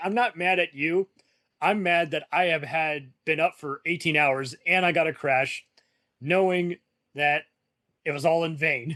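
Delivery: normal talking voice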